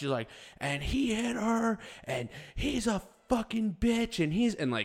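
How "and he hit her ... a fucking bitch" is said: shrill, very high, drawn-out screaming. Retelling a woman screaming at a man while filming him: imitating a woman screaming. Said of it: "the whole time that she's screaming this".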